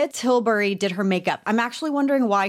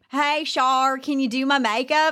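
fake, laid-on Southern accent; 3 semitones higher than usual. Imagine Brittany calling Charlotte Tilbury on Monday, in a fake Southern accent as Brittany. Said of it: "I'm allowed to fake the accent".

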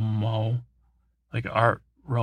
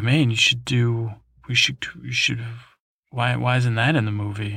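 ordinary talk, nothing marked

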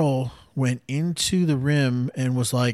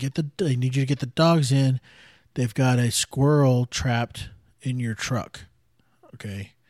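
ordinary delivery

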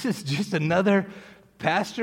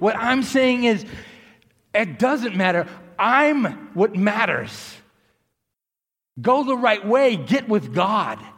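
drawn-out, slow, emphatic yelling; 3 semitones higher, 3 dB louder than usual. Passing on what god is saying, ending the message: yelling. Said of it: "Sorry if I'm yelling".

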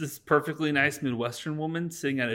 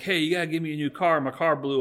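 imitated assertive, aggressive tone, louder; 2 semitones higher, 4 dB louder than usual. Retelling a character demanding a new car at the front office: imitating an assertive, aggressive demand. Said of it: "being assertive, and he's, like, aggressive".

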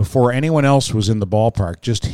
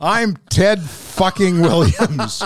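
all-out cocky bellow, high, top-of-lungs scream; 7 semitones higher than usual. Retell a story from a book about a confident hitter, imitating Ted Williams screaming. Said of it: "he would scream at the top of his lungs".

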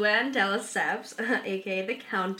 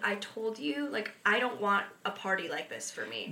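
mock-crying, tearful, quieter; 5 dB quieter than usual. Retelling what she said at her surprise birthday party, imitating someone crying. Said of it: "she was literally crying".

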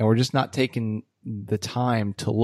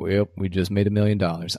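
put-on flat, deadpan monotone with no emotion. Quoting their dad announcing big news, imitating a flat monotone. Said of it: "you cannot tell the difference in the man's voice".

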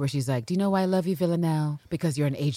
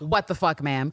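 put-on panicked, freaking-out tone. Retelling own reaction while watching live: imitating own freaking out. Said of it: "freaking out".

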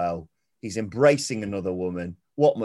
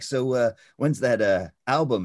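mock stiff, wooden, uneasy, stilted phrasing; 3 semitones higher than usual. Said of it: "it's just so stilted".

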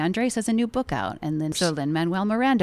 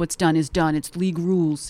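mocking, obnoxious droning voice, like a stiff official. Retelling how the league refused to trade back her kid: mocking impression of the league guy. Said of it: "being a dick by doing that voice, but that is the guy's fucking voice".

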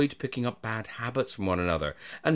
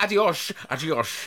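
fake Spanish accent, pitched higher; 4 semitones higher than usual. Asked to do a Spanish accent, saying goodbye: put-on Spanish accent. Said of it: "Please do your accent".

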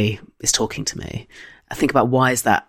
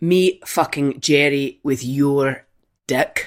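very slow, drawn-out Scottish accent; 2 semitones higher than usual. Saying a requested line out loud in a Scottish accent. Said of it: "in a Scottish accent".

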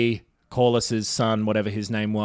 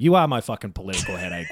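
ordinary talk

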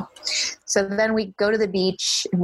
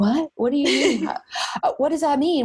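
put-on stressed, anxious voice, much higher; 7 semitones higher than usual. Retelling a man's reaction to a remark made while packing, imitating someone stressed out. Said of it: "like all stressed out".

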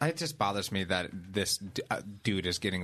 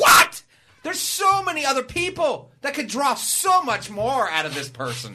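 loud screaming shout, higher and louder; 10 dB louder than usual. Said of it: "Sorry for screaming "what" so loud".

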